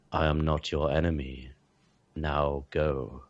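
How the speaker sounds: very low, flat monotone delivery. Narrating a scene, voicing Thaddeus as he answers the party: very low monotone. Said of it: "in a very low, kind of monotone voice just says".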